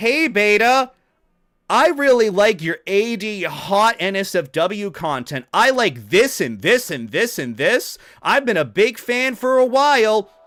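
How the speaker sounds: far too loud, high voice. Speaker describing people approaching her, imitating someone talking too loud. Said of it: "triple the volume that you should".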